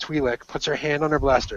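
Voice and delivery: ordinary delivery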